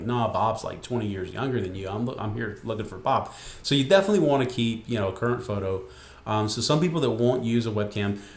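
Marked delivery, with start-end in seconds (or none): none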